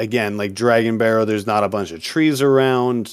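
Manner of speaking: ordinary delivery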